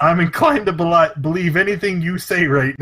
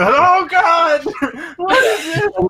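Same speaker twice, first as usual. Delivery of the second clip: panicked screaming, very high and drawn out; 13 semitones higher than usual. A narrator voices a man sprinting away through the woods, screaming. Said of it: "and he's screaming".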